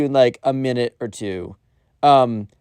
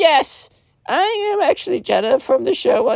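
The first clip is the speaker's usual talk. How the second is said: very bad fake girl voice, much higher pitch; 14 semitones higher than usual. Retelling what he says back, in the crappiest fake girl voice. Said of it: "the crappiest fake girl voice ever".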